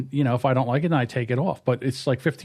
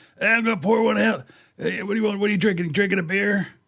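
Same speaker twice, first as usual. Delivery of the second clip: scratchy, pitched-up late-night host voice; 6 semitones higher than usual. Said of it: "that guy with the scratchy voice".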